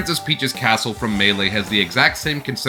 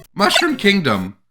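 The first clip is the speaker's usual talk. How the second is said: voice cracks, much higher; 11 semitones higher, 4 dB louder than usual. Speaker naming a location in a game: voice cracking. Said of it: "makes my voice crack to say".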